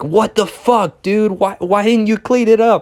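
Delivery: furious, high, angry shouting. Retelling how an angry older brother yelled, imitating someone yelling angrily. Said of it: "he was yelling at me, like".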